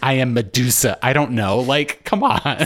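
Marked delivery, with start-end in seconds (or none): 0.0-1.0 mocking put-on imitation voice, pitched higher. Mocking a character who won't let visitors look: imitating Daisy. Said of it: "She's just like".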